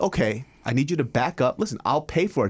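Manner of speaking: acted, calm, gentle, very kind voice. Speaker retells first answering a guy screaming at him, retelling his very kind approach. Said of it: "at first my approach is like very, very kind".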